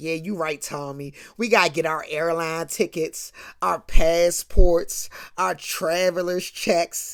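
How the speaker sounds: put-on taunting voice. Retelling how one woman rubbed it in another's face: retelling someone rubbing it in. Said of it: "Pam's throwing it in Gina's face".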